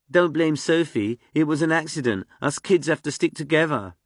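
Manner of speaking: put-on mocking whine, high and loud. A character mocking another during an argument, in a whiny mocking voice. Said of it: "Achilles put on a whiny voice, mocking Freak".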